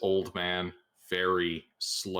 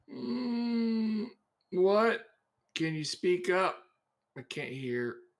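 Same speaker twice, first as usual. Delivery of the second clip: put-on very high, mousy old-man voice, long drawn mm; 13 semitones higher than usual. Voicing a hunched shopkeeper with glasses greeting customers: mousy old man voice. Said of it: "this mousy old man".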